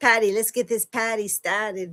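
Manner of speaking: Boston accent, r dropped, "party" said "pahty". Sharing a comedian's misheard lyrics with listeners, in a Boston accent. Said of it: "That's the Boston accent".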